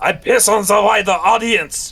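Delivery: put-on French accent. Reading out another user's reply from a book discussion, imitating Meister in a French accent. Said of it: "French accent".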